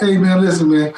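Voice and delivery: ordinary delivery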